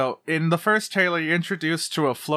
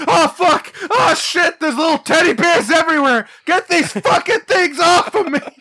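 very high, very loud, frenzied, aggressive screaming; 13 semitones higher, 8 dB louder than usual. Imagining Bill Burr fighting the Ewoks: imitating Bill Burr screaming. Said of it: "Just screaming".

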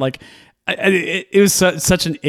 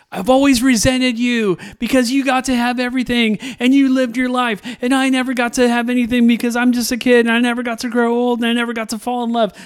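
put-on very high, shouted yelling outburst; 9 semitones higher than usual. Retelling a movie scene where a character yells at Cersei: imitating a character yelling. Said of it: "yelling at Cersei, you know, in the middle of chaos, going like".

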